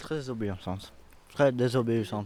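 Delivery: talking through a mouthful. Eating a peach while answering a question, speaking with mouth full. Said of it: "ce que vous avez dans la bouche".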